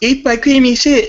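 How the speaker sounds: very high, loud, small put-on woman's voice.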